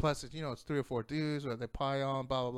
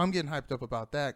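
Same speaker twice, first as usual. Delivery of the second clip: plain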